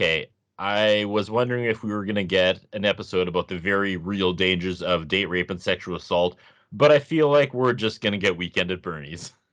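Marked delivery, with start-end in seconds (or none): none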